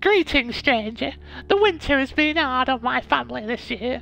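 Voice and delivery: very high, put-on peasant woman character voice. Reading a game aloud, voicing a peasant woman met in a forest clearing: put-on peasant woman voice. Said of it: "What is that voice?".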